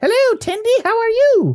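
very high, loud cartoon beaver voice. Playing a beaver character greeting another character, beaver voice. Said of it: "I got to come up with a beaver voice".

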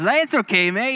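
put-on reassuring Canadian accent. Retelling a friend's calm words after a crash: imitating Blaine's Canadian accent. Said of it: "He's Canadian, so you kinda get this".

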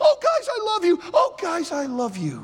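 pretend crying, pleading. Acting out Joseph revealing himself to his brothers: mock emotional crying. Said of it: "He starts crying emotionally".

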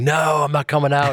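frantic, high-pitched. Retelling a story of Olivier locked backstage: imitating Olivier screaming. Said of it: "And he's screaming".

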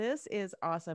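usual speaking voice

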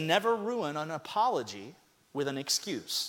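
ordinary delivery

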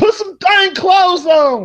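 put-on shrill hollering, very high-pitched, swooping yell. Telling listeners how they reacted while watching TV, retell a shout. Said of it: "I was shouting it to everybody".

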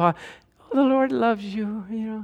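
relentlessly cheerful, sweet, brightly optimistic voice. Recalling a woman who kept coming in looking for him, Pollyanna voice. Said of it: "she had that Pollyanna, you know, voice".

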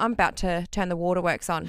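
normal talking voice

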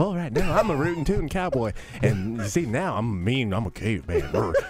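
gentle, effeminate cowboy voice. Mocking a guy who just names his impressions, in a Bob Ross-like effeminate cowboy voice. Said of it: "Sounds like if Bob Ross was doing an effeminate cowboy".

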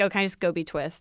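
plain

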